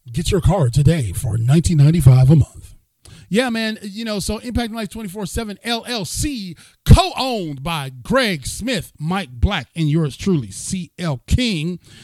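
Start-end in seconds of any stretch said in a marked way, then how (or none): 0.2-2.8 loud radio ad announcer voice. Showing off the show's new equipment, the speaker does a radio announcer voice. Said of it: "I can sound like a radio announcer".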